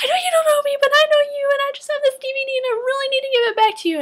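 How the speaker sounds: very high-pitched, loud, escalating yelling. Retelling running toward a man to return a DVD, retelling their own yelling. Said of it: "I start yelling at him".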